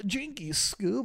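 high-pitched nerdy cartoon character voice. Showing what he'd do if asked to do a nerd: nerd voice like Scooby-Doo. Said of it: "do a nerd".

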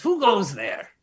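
fairy-tale bridge troll voice. Telling a story, the narrator voices the troll meeting Jeff at the chasm, in a troll voice. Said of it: "and the troll comes up and he goes".

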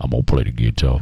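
very deep voice, dropped right down. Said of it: "he's got a deep voice like this".

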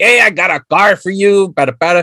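put-on stock eighties-film Spanish accent. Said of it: "they had him do the accent".

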